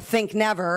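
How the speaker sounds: ordinary talk, nothing marked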